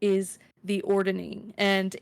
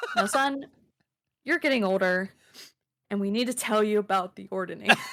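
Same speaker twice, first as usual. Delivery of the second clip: put-on parental lecturing voice. Joking that it sounds like sitting your kids down: mock parent sit-down talk. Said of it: "like you're sitting your kids down".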